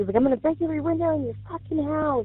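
mock screaming. Telling about a missed call, speaker quotes the caller's threat, retelling a scream. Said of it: "he's just screaming".

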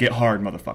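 ordinary delivery

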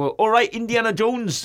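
country farmer accent. Speaker announces a farmer accent and greets indiana jones; farmer accent. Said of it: "I'm about to do a farmer accent then".

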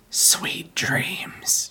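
hushed, soft, breathy whisper, barely voiced. Acting out a figure who stands over a sleeper's bed: whispering. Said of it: "he just whispers".

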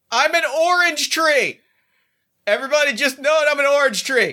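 very loud, high-pitched, full-volume bellow. Playing an orange tree in the middle of a death scene, very loud. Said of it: "just very loudly".

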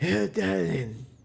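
rough, gravelly, raspy smoker's voice. Describing a voice the speaker wouldn't mind having: raspy smoker's voice. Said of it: "that raspy smoker's voice where it's like".

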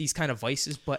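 plain

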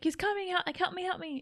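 high-pitched, tearful, pleading crying voice. Posing a what-if about a woman at the door, give a mock crying plea. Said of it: "What if she was just crying".

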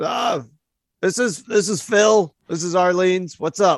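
rough, pretty gruff voice. Voicing a bar worker, Phil, answering the phone: gruff voice. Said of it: "pretty gruff voice answers".

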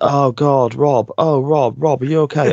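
very slow, stretched, drawn-out shouting. Complaining about a man who kept repeating this, retelling someone shouting. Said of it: "he just kept shouting".

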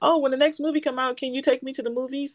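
put-on high, fast, eager kid voice. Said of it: "And he's like".

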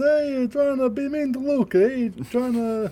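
put-on Italian accent. Joking about bullying Italian people online after a movie, Italian accent. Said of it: "Just speaking with Italian accents".

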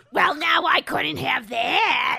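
croaky, toad-like voice. Taking turns reading aloud, voicing a character so she sounds like a toad. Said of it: "she really truly sounds like a toad when you read her like this".

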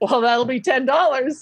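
acted, playful joking dad-joke delivery. Retelling what a server said about the price: imitating a joking dad tone. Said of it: "he said it in, like, a dad, like, joking way".

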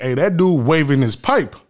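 imitated Chicago speech. Showing how people from Chicago talk: imitating Chicago slang.

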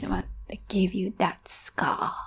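ominous put-on wandmaker voice. Discussing the book with others, doing an ominous Ollivander impression. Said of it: "That was my attempt".

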